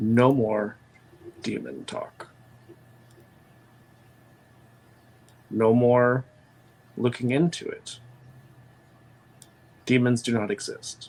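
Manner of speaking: stage whisper carrying so everyone hears. Game master voicing a leader turning to Isabella and the sires: audible whisper. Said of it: "as opposed to his normal, more commanding, booming voice, he whispers to them".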